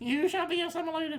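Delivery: tiny squeaky voice, pitched very high. Describing a toy cube kept in a bathroom, in a little squeaky voice. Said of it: "like a little squeaky voice".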